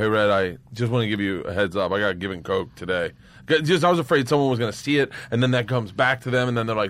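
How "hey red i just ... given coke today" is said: plain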